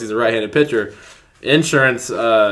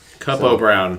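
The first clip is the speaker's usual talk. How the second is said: ordinary talk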